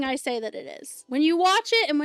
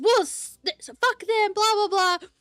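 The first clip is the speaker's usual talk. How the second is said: mock anger, much higher pitch, slower; 6 semitones higher than usual. Retelling a friend's reaction to a movie he hated: mock-angry pissed-off friend. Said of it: "He was so pissed".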